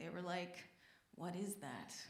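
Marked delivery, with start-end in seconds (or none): 1.2-1.9 put-on hushed whisper sounding exasperated. Retelling what the parents said on seeing it: imitating an exasperated hushed whisper. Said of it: "in that exasperated, hushed, uh, uh, whisper that parents have".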